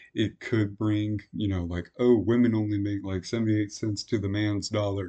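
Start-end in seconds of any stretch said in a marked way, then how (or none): none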